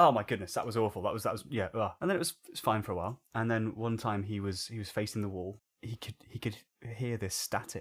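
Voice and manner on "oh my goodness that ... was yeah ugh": normal talking voice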